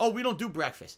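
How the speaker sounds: mock very broken English. Retelling what an airport server told them, imitating broken English. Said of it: "she barely speaks English".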